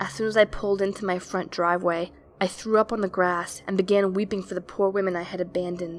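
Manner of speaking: ordinary delivery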